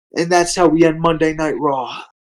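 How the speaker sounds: ordinary talk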